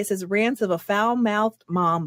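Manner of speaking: ordinary delivery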